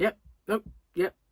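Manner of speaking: put-on terse, curt, grumpy, unwelcoming Scottish accent. Speaker mimicking an unwelcoming bloke at a pub, mock-grumpy scottish accent. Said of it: "with a Scottish accent though".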